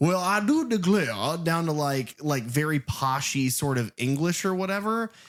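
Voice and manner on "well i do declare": loud, high, larger-than-life cartoonish character voice. Describing an actor's shifting accents, imitating a Foghorn Leghorn voice. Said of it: "a Foghorn Leghorn sort of".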